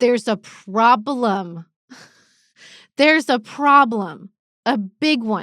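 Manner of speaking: slow, drawn-out, emotion-filled emphasis. A parent with kids in school, speaking in an emotional voice. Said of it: "you can hear the emotion in my voice".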